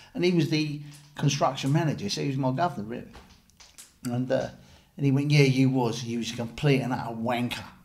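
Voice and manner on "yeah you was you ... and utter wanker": ordinary talk, nothing marked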